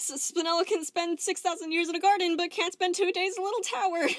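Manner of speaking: put-on wheezing. She finishes a backflip with a forced smile, then speaks, wheezing. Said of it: "She wheezed".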